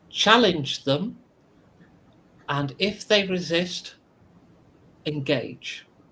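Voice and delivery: faintly mechanical, slightly robotic woman's voice. Voicing an unseen speaker giving orders: slightly robotic female voice. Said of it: "a female voice that sounds slightly robotic".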